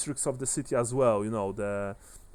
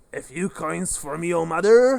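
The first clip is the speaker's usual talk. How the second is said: put-on very loud, high, slightly drunken call; 5 semitones higher, 8 dB louder than usual. Speaker describing a scene to listeners, voicing a stranger behind them: slightly drunken voice. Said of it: "You hear slightly drunken voice".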